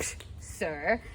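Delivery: falsely polite, sarcastic, scornful, scoffing whisper. Explaining to listeners how the characters pretend to be polite: sarcastic. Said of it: "They're being sarcastic".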